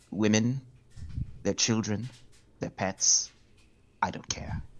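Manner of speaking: friendly smiling threat. Voicing a character who threatens a rival: calm, friendly, smiling menace. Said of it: "calm and friendly".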